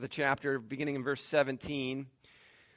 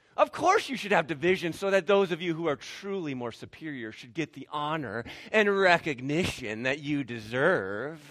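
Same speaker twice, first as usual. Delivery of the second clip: pure, heavy sarcasm. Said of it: "Pure sarcasm".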